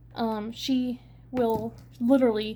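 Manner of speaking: normal talking voice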